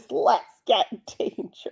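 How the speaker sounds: soft, breathy cartoon hero style voice. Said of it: "Darkwing Duck voice".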